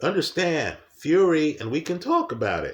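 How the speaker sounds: voice cracking and breaking with emotion. Speaker talking about a boxer, emotional, voice cracking. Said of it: "My voice is cracking here".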